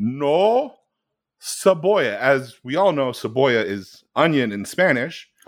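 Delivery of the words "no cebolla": high, slow, halting voice. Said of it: "in this halting voice".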